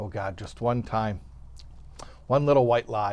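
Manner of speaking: hushed, whispered under the breath, prayer-like. In a joke, the pastor looks up to heaven before answering the police chief, whispering a little prayer. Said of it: "he whispers a little prayer".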